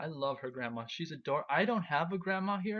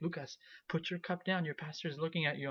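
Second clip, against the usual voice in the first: put-on worried tone; 3 dB quieter than usual. Retelling a story about giving a toast, the speaker imitates her worried voice. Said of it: "And she was worried sick".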